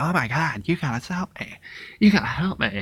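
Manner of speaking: put-on begging, pleading tone. Retelling a movie scene where Dee begs a stranger for help: imitating Dee. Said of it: "And that's how she sounded".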